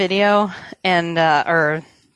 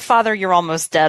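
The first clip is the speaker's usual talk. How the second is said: usual speaking voice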